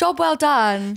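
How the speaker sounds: British English accent and pronunciation. Answering a request to say a phrase in british: british accent. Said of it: "how do you say".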